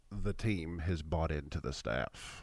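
put-on very low, slow, soft, hushed crooner voice. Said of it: "he tried to get it real quiet".

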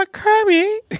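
very high, put-on puppet voice. Talking about the Muppets and quoting a favorite one, Miss Piggy voice. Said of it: "And she's like".

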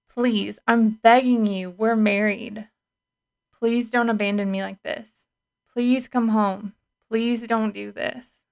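acted-out pleading voice. Quoting what they once said to their spouse, retelling own begging. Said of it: "I begged and I pleaded".

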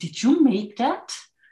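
incredulous tone. Recalling people asking about her handmade clothes, mimicking a disbelieving tone. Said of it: "In this kind of disbelieving tone of voice".

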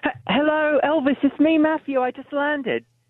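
put-on British accent. Phoning in to the show as a fake caller: Matthew Hussey impression. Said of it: "fake Matthew sounds more like Matthew".

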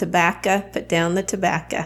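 tobacco said in a Southern belle accent. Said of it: "hear my Southern accent come out".

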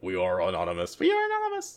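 clumsy, fake disguised voice, hushed and swooping. Joking that they were infiltrated, a speaker does a bad disguised Anonymous voice. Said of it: "badly trying to disguise their voice".

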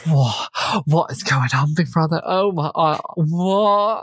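put-on camp voice sounding bewildered and disbelieving. Retelling a housemate's shocked arrival: imitating someone camp and bewildered. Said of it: "it's real, like, high camp".

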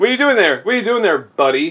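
friendly, chatty bar regular. Imitating a creepy guy at a bar who talks your ear off: imitating a chatty bar regular. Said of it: "he's the kind of guy that sits down at a bar".

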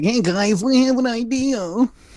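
very high, slow, stretched piping voice. Imagining the other speaker piping up in band practice, imitating a friend's band-practice voice. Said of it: "you do it in that voice".

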